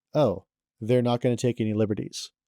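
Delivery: plain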